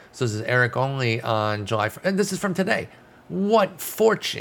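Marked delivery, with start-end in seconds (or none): 3.3-4.5 high, slow, sarcastic-sounding delight. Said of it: "I know I sound sarcastic".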